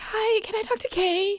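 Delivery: put-on very high, slow child voice playing grown-up. Retelling calling a parent at work as a child: imitating own childhood phone call. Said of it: "You gotta do the impression of it".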